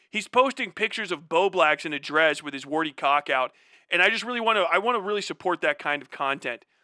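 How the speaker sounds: normal talking voice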